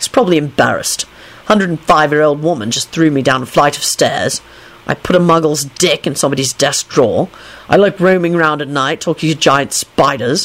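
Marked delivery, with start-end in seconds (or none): none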